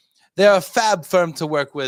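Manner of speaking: terrible fake British accent. Asked by a co-host to read a message aloud, bad british accent. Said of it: "You got to read that in a British accent".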